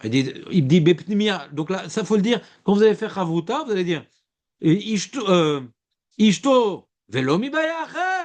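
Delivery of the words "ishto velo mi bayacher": rising, questioning intonation. Showing how to read a line with its punctuation in chavruta: questioning intonation. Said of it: "Point d'interrogation".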